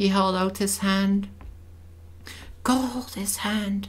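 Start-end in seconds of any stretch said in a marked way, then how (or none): 2.6-3.9 whispered, slower. The narrator guiding Lina beside a hospital bed, whispering. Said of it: "I whispered to Lina".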